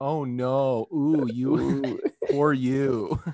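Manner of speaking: put-on sarcastic sympathy. Imitating how the other speaker just said it: imitating a sarcastic "oh no". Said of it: "You said that like, like you felt so bad, like, sarcastic".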